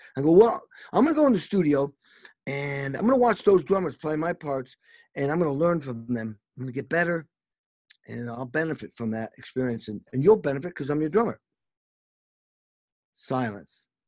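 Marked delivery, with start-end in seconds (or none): none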